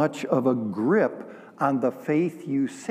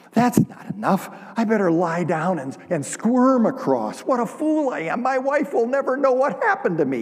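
high-pitched play-acted crying and whimpering; 7 semitones higher, 3 dB louder than usual. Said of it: "And he begins to cry, and he's whimpering".

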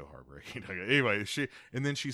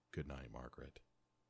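mock sorrowful, lower and much quieter; 7 semitones lower, 16 dB quieter than usual. Recounting a scene where he hangs up the phone, acting out a very sad goodnight. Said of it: "then very sadly says".

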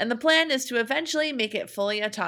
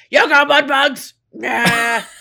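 very loud, very slow, drawn-out angry holler; 3 semitones higher, 10 dB louder than usual. Retelling how he yells at the seafood counter: imitating him yelling angrily. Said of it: "I do like your impression of him".

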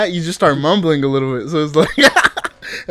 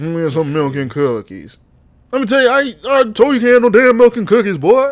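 exaggerated old southern man voice; 4 semitones higher than usual.

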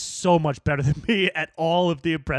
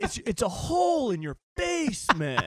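put-on mellow podcaster voice, higher pitch; 8 semitones higher, 4 dB quieter than usual. Describing mushroom coffee when the other speaker asks: Joe Rogan impression. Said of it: "can you say it as if Joe Rogan was saying it?".

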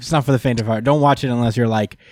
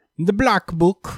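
put-on pitched-up old-style British accent; 8 semitones higher than usual. Saying a phrase on another speaker's request: British accent.

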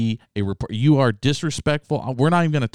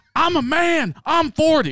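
mock furious yell, very high and very slow. Quoting the coach's famous line again: imitating someone screaming. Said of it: "lividly screaming at this woman".

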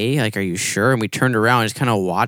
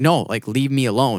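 mock angry outburst in frustrated, irate man voice; 3 semitones higher than usual. Retelling how a homeless man told a group to leave him alone: imitating a frustrated, irate man.

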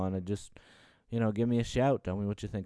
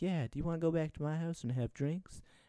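put-on high, girly voice; 8 semitones higher, 5 dB quieter than usual. Acting out a joke date conversation, the speaker voices the woman: girl voice. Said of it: "I couldn't fight out the girl voice".

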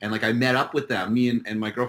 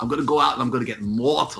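fake Liverpool accent. Retelling what he said while imitating how they talk: Scouser accent. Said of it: "The Scouser accent is like like that's what it sounds like".

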